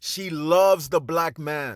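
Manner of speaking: "loves" stressed, slow and heavy.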